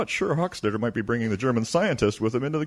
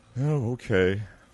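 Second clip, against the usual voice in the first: deflated, disappointed, let-down delivery. Told the major's guest is an attractive woman, replying to the Commandant disappointed. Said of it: "Why do you sound disappointed?".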